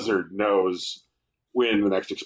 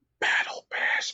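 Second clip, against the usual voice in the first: soft, hushed, close whisper. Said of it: "whispered in my ear".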